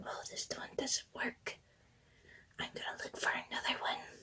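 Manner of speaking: very hushed, very quiet whisper. Imitating a video creator searching through markers: imitating someone whispering. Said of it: "she's, like, whispering".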